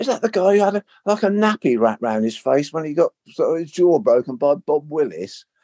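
blurted out openly, outspoken, meant to be heard. Retelling his remark about a man who then overheard it, said loudly. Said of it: "I said in a bit of a loud voice".

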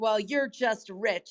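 open disdain, scornful and disdainful. Retelling what a woman said in a clubhouse room: imitating someone's disdain. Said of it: "she just said it with such disdain".

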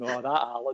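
mock words, amused, broken up by laughter. Retelling how the ref walked away after the delay: imitating someone laughing while talking. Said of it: "walks away laughing, going".

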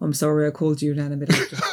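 meek, abashed, sheepish tone. Retelling a man turning to his wife after talking to the children, mock-sheepish apology. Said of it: "quite sheepishly says".

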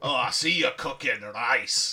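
put-on attempted Scottish accent. Retelling how a man judged your cooking, in an attempted scottish accent. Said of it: "I was going to do a Scottish accent then".

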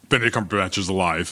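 ordinary talk

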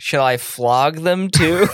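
slow, sassy, dripping with sarcasm. Quoting Tuvok's reply to Janeway from the episode: sassy Tuvok voice. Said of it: "he can be a little, a little sassy sometimes".

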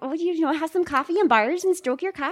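very high, high-pitched put-on Midwestern accent. Saying they've wanted to try one, the speaker does a Midwestern mom accent. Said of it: "like a midwestern mom like".

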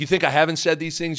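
normal talking voice

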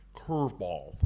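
low, hushed, with the L in curveball drawn out. Showing how he used to say one word, do a Skip Bertman impression with long L's. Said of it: "When Skip used to say curveball, he'd go".

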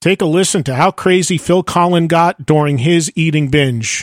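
sarcastic, leaning on "crazy". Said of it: "I say sarcastically".

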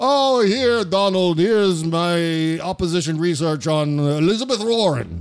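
terrible, slow, drawn-out, clumsy put-on Russian accent. Imagining Vladimir Putin handing over opposition research: terrible Vladimir Putin impression. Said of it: "That's my terrible, terrible Vladimir Putin impression".

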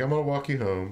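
ordinary talk

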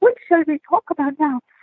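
put-on excited slight Swedish accent. Retelling an anecdote, the speaker quotes Annie Nanji; Annie Nanji's little Swedish accent. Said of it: "this little Swedishy accent".

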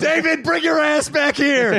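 very high, slow mock yell.

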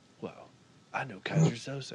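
breathy, hushed, nearly whispered voice. Quoting a movie line as the actor would say it: Keanu Reeves impression. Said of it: "like, says, like, Keanu Reeves".

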